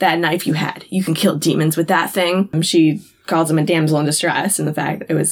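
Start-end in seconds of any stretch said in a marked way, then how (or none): none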